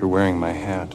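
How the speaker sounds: put-on very soft voice. Retelling a film scene where a character steps forward: imitating saying it very softly. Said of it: "says very softly".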